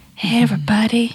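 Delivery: sexy, seductive voice, opening in a whisper. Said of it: "and I did a sexy voice".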